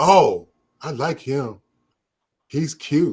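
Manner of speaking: very slow, drawn-out, lovestruck woman voice. Telling how a woman fell for one of the guys; imitating a smitten woman. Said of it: "she fell in love with him".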